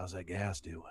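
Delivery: calm, easygoing, relaxed voice. Retelling how the dentist leaned in over the chair: imitating the dentist. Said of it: "And he does it just like that".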